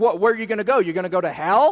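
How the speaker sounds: mock taunting. Retelling a scripture passage, the speaker voices the crowd; mimicking a mocking crowd. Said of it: "they mockingly say to Jesus".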